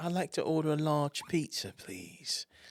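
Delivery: slow, put-on British accent. Retelling a prank call to the local pizza place, ordering in a fake british accent. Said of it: "I called with this fake British".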